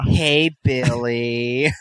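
put-on campy, flamboyant voice. Retelling how a man greeted somebody, the speaker uses a campy voice. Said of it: "Why does your Billy sound like".

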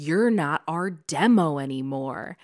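smug, self-satisfied, dismissive tone. Retelling what a man said to someone, imitating a smug remark. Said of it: "But he says it so smugly".

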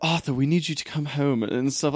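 bad, awful, fake, put-on British accent. Mimicking a character's line from Justice League, bad British accent. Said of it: "that weird British accent that sounds awful".

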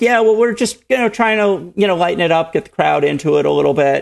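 high-pitched, rushed, offhand, mock nervous tone. Retelling what he said while super nervous; retelling nervous downplaying. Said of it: "I'm like super nervous and I'm like".

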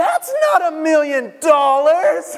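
acted, very high, loud, drawn-out little-kid yell. Retelling a little sister's reaction to a gift: imitating a child yelling. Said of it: "throws them across the room and yells".

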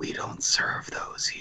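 soft, breathy, hushed whisper. Telling of a drive-thru where the waitress answers a burger order, hushed whisper. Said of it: "will whisper in hushed tones".

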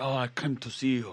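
put-on Russian accent. Retelling a German man met before the show, in an accent like a Russian oligarch. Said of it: "It sounds like a Russian oligarch or something".

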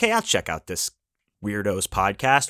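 ordinary talk, nothing marked

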